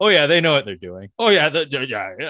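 loud, boastful know-it-all dad voice. Retelling what Tomas keeps saying about the avalanche: imitating Tomas as a braggadocious dad. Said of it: "a braggadocious dad, you've heard that line before".

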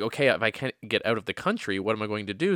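ordinary delivery

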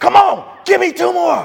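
high, raspy, in-your-face screaming, acted out. Retelling a man in your face while you're about to pass out, imitating a man screaming. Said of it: "he's screaming".

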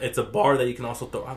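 voice cracking. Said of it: "my voice cracked like a little bitch".

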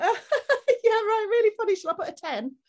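high, loud, laughing dismissive tone. Recounting her reaction to hearing about postnatal depression, mock-laughing, dismissive. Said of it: "She laughed at me and was like".

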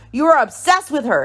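mild, mock, pointed accusing outburst. Retelling an accusation in an argument: imitating someone yelling. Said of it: "And Jasmine yells".

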